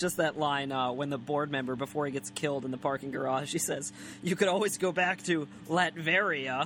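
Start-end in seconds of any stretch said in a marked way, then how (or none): 4.2-6.7 put-on, very condescending slow drawl, talking down. Speaker quotes a board member from a Pete and Pete episode, mock-condescending. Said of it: "in that very condescending tone".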